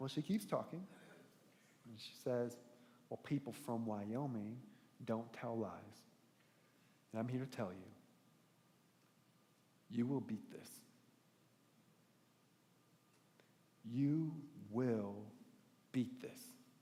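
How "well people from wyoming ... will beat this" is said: Western movie frontier-style drawl. Retelling what a nurse said at the bedside: imitating a western movie voice. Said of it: "voice that sounded like she walked straight out of a Western movie".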